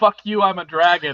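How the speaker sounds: plain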